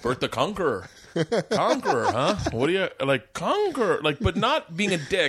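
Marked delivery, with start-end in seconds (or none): 0.0-4.0 put-on lightly cynical, friendly teasing Montreal accent. Speaker retelling to the listener what the listener once said: imitating Bert's Montreal accent. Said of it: "in that Montreal accent".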